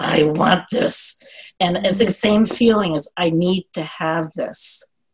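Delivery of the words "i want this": very rough voice full of gravel. Retelling what was said to the husband, in a very gravelly voice. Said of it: "in a very gravelly voice".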